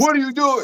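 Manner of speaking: acted-out, very high, in-your-face yell. Acting out yelling as a coach after a lost match: mock coach yelling in your face. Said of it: "Imma get in your face".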